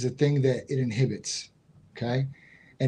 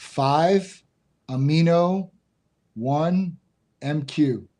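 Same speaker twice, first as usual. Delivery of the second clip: deliberately slower speech; 2 semitones higher than usual. Asked to repeat a peptide name a little slower, saying it slower. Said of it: "could you say that name again a little slower?".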